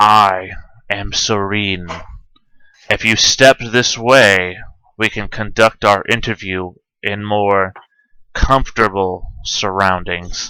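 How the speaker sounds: deep, well-cultured, polished voice. Game narrator voicing a tall blue-skinned being greeting the players, well-cultured and deep. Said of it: "in this well-cultured and deep voice".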